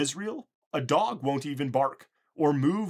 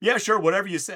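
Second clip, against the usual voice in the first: mock, mildly sarcastic, dismissive, pitched up; 5 semitones higher, 3 dB louder than usual. Retelling Moses answering Pharaoh's threat, Moses, mock-sarcastic. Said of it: "Moses being a little bit sarcastic".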